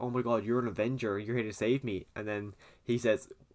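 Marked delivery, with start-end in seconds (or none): none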